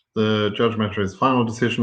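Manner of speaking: ordinary talk, nothing marked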